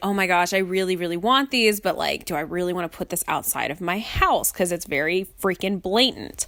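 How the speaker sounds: usual speaking voice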